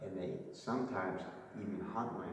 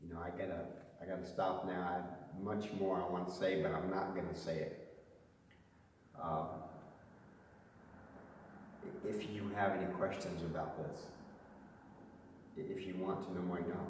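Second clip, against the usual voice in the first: choking up, voice on the edge of crying; 3 dB quieter than usual. Cutting the talk short while about to tear up: close to tears. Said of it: "I'm gonna tear up here in a second".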